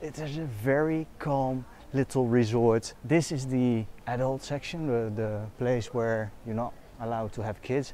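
voice dropped low, hushed and quiet. Showing viewers the adults-only pool section, the speaker lowers their voice. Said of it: "I'm gonna have to lower my voice a little bit".

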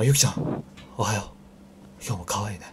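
breathy, sighing voice. Copying the other speaker to practice becoming a breathy YouTuber, breathy YouTuber voice. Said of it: "吐息系YouTuber になるために".

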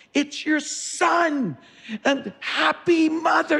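play-acted very high, drawn-out screaming. Son retelling calling his mother who can't hear, retelling screaming on phone. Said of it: "I'm screaming on the phone".

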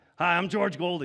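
mock rough, gruff voice. Retelling a phone call from a search team member: imitating a gruff, rougher voice. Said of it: "it was a gruff, rougher voice".

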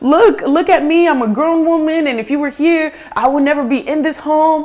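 high, loud pleading voice. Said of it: "I'm like".

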